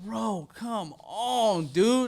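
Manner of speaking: very slow, stretched-out wailing scream. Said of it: "Started screaming like a girl".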